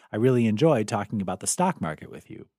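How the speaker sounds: ordinary talk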